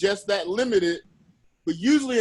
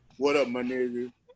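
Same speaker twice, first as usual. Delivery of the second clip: put-on tired, careless, indifferent voice, much lower pitch; 8 semitones lower than usual. Describing a person who seemed tired or indifferent, imitating a tired, careless voice. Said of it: "just tired for the day or just didn't give a fuck".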